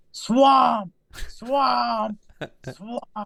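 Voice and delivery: put-on shrill little-boy toddler yell, very high. Speaker imitating toddler boys in the back seat, imitating toddlers yelling. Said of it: "little toddler boys just yelling in the back seat".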